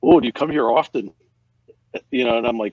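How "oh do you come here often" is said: bad put-on Canadian accent, pitched up and loud. Retelling what the guy in Ottawa said as you held up your card: not-bad Canadian accent impression. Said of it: "not a bad Canadian accent".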